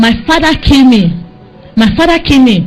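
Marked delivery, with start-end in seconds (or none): none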